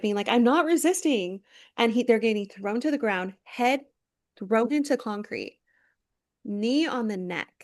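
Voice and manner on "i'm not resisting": high, loud screaming. Retelling a video of a fifteen-year-old: imitating someone screaming. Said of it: "screaming it".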